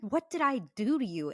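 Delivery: put-on mad, accusing, angry demanding tone. Retelling what he said during an argument, imitating someone angry. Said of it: "He really got so mad".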